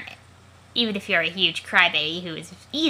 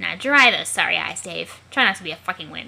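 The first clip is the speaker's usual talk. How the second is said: usual speaking voice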